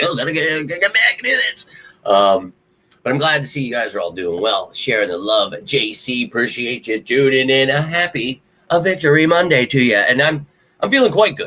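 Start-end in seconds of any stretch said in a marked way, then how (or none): 0.0-1.7 high, frantic voice. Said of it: "Like, I'm always trying to make sure, like".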